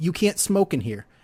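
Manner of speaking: plain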